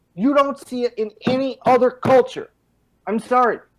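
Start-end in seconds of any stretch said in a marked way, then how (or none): 0.2-2.5 high, angry shouting outburst. Talking about young people killed over nothing, yelling in anger. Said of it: "I don't mean to yell at you".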